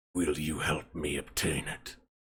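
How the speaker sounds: very low, hushed, horrible croaking undead voice. Dungeon master voicing a revenant seeking revenge, in a horrible croaking voice. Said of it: "in a sort of horrible croaking voice".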